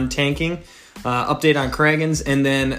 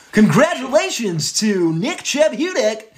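weird announcer voice, much higher; 8 semitones higher than usual. Speaker opening the news segment, in a weird announcer voice. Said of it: "some weird announcer voice".

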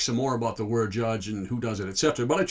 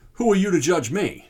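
high, defensive, bristling comeback tone; 6 semitones higher, 4 dB louder than usual. Quoting what people say when judging comes up, in a mock-defensive tone. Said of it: "Usually in a defensive tone like that one".

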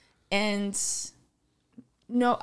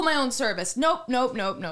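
ordinary talk, nothing marked

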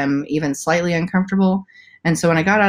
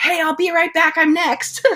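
very high-pitched, screamed hollering call; 12 semitones higher than usual. Holding her baby, she retells shouting to the village staff: retelling her own scream. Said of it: "I'm like screaming".

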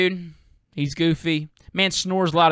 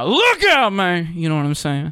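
loud, high, big belting rock-singer voice; 3 dB louder than usual. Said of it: "how to do an [name] impersonation".

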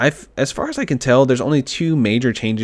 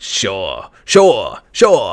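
repeated "sure" with swooping, swinging sing-song tune; 3 semitones lower than usual. Showing how the character says sure, doing an Arthur Morgan impression. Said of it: "It's just like".

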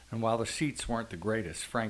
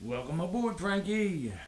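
loud booming bellow, pitched very high; 10 semitones higher than usual. David greets Frank as he steps into the office, bellowing. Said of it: "bellowed David".

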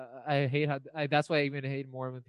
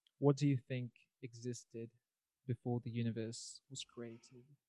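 soft, put-on British accent; 7 dB quieter than usual. Asking a conversation partner a question about existence: British accent. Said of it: "I got to go with a British accent".

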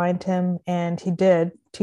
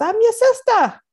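put-on Bahamian accent; 6 dB louder than usual. Retelling a woman's reply on a phone call: imitating American-Bahamian accent. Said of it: "American / Bahamian accent".

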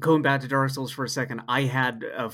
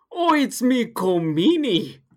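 put-on Irish accent, higher and louder; 10 semitones higher, 6 dB louder than usual. Doing an impression for the other speaker: Colm Meaney impression. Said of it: "I could do a Cole Meany impression".

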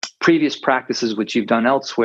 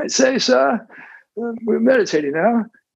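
put-on British butler voice, very high; 12 semitones higher than usual. Demonstrating the meditator inner voice during a meditation session, in a Jeeves British butler voice. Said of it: "a British butler".

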